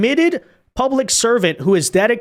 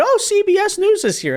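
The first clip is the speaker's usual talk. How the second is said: mock, very high, all-excited voice; 12 semitones higher than usual. Mocking an official's reaction to reporters: imitating someone all excited. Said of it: "she's all excited".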